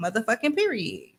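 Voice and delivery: ordinary delivery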